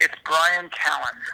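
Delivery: very slow, deliberate, spelled-out insistence. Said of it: "I'm gonna say this just one more time".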